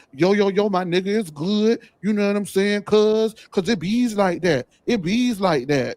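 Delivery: high voice loaded with exaggerated, mocking inflections. Retelling how Riley talked when mad at one of the girls, imitating Riley's inflections. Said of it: "doing his inflections and pursing his lips and rolling his neck and adding inflections".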